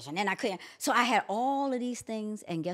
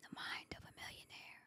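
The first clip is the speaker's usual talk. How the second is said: whispered, barely voiced, hushed and breathy. Retelling how a prophet whispered a book's name: imitating a whisper. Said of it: "He whispered it".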